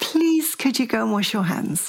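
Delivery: very sweet, gentle voice. Showing how a parent first asks a child to wash hands: lovely, sweet way. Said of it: "in a very lovely, sweet way".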